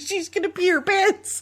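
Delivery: high-pitched mock yelling. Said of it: "she starts yelling".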